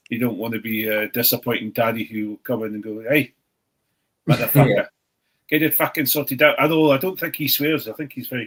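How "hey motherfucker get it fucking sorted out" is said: loud, menacing, scary South African accent. Imagining a disappointing father scolding, in a scary South African accent. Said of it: "with a shit scary fucking accent".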